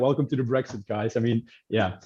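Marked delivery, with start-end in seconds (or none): none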